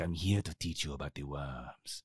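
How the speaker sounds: terrible deep, hushed voice, low and soft. Joking that a character teaches the class: terrible Ricardo Montalban impression. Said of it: "I know that was a terrible Ricardo Montalban".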